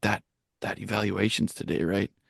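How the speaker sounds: soft, hushed half-whisper. Retelling what people at school asked that morning: imitating people half-whispering.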